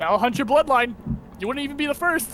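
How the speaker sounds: high, goading, taunting dragon voice, threatening tone.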